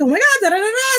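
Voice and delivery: very high-pitched, all-excited gushing. Imitating one of the ladies at a Poshmark event: imitating someone all excited. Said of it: "all excited".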